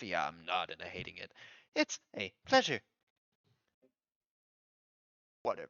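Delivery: low, grumbled mutter under the breath. A guard in the scene makes a remark to himself: muttered under his breath. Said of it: "hear the guard say under his breath".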